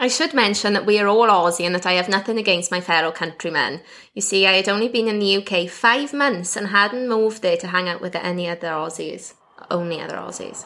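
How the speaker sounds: usual speaking voice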